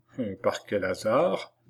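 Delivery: plain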